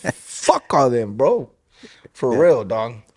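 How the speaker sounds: hostile, aggressive delivery, slow with swooping pitch. Venting about people who put on a fake image online: aggressive. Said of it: "I'm saying it like that with an aggression".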